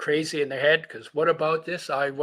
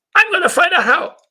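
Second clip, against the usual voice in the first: put-on brash, cocky little kid voice, very high; 12 dB louder than usual. Recalling their inner voice at six years old, the speaker retells it in a cocky little voice. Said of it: "this little cocky voice says".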